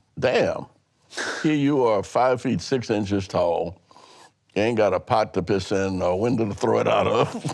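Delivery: ordinary talk, nothing marked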